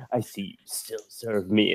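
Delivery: full shift into an imperial voice. Retelling a photo op where he shifted into the voice: imitating the Emperor's voice. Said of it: "he totally shifted into the voice".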